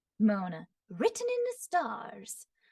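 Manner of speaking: punchy mid-Atlantic accent, every word punched, swooping, small mouth. Presenting character voices, the speaker voices Mona in a mid-Atlantic accent. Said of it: "kind of like a mid-Atlantic accent".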